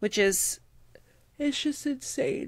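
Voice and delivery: speaking through a yawn. Mid-conversation with a co-host, speaking through a yawn. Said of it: "I can't stop yawning".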